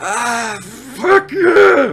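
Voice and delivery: very high-pitched, squeezed out through clenched teeth. Asked if he got the message, a beaten character answers through gritted teeth. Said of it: "Through gritted teeth".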